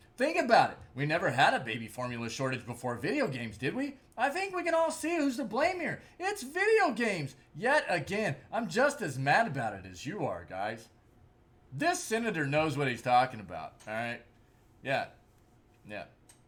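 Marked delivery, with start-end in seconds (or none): 0.2-14.2 dripping, ironic, swooping, sing-song sarcasm. Mocking a senator's claim about video games, sarcastic. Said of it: "I'm being sarcastic".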